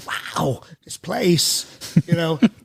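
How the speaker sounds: clipped, choppy put-on voice. Explaining impression influences, showing a staccato voice: Christopher Walken staccato voice. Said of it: "who has the staccato when he speaks".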